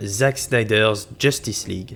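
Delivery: slow, showy, magnificent, proud English accent.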